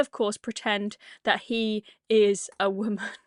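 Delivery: ordinary delivery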